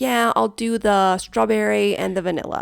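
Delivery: casual, laid-back put-on American accent. Imitating how americans order in an ice cream shop: american accent. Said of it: "Are you doing an American accent there? Yeah, I am".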